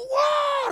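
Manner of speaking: high, angry yelling. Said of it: "kayak marah gitu".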